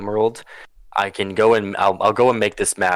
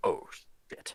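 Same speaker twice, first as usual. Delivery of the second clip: muttering under breath, quieter. Voicing a character who stares wide-eyed at the group: mumbling under his breath. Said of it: "mumbles under his breath".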